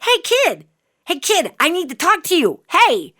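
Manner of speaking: mock high hollering, calling out. Recounting a dream where a stranger chases the speaker up escalators, imitating someone yelling. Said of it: "he's yelling after me to slow down".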